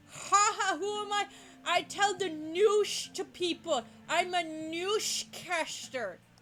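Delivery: put-on tipsy voice. Playing a newscaster, answering someone who asks who they are, in a drunk voice. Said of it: "I get to do my drunk voice".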